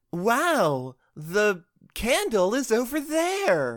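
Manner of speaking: put-on very high kids-show voice, hyper-enunciated, wow stretched out. Describing the fun of playing Dora, demonstrating it: hyper-enunciating Dora voice. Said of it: "hyper-enunciating, hyper-attentive".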